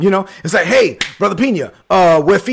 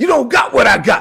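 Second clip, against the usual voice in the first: put-on yelling, pitched higher; 5 semitones higher than usual. Retelling yelling at the tv: retelling a yell at the tv. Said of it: "I started yelling at the T V".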